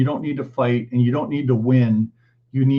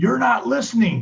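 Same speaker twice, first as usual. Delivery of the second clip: very high, ragged, rough yelling; 10 semitones higher than usual. Retelling how he yelled his points when triggered: imitating his own past yelling. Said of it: "yelling my points".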